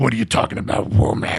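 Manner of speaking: exaggerated, mocking, rough gravel-throated voice. Mocking two movie characters, the speaker quotes their dialogue in an exaggerated gravelly voice. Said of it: "in the most gravelly way".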